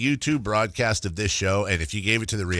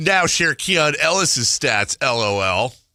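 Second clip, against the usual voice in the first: put-on needling voice, high, loud, taunting; 5 semitones higher, 5 dB louder than usual. Reading a listener's text aloud in a put-on texter voice. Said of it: "I'm gonna do a voice here".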